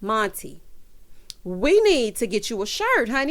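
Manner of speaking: normal talking voice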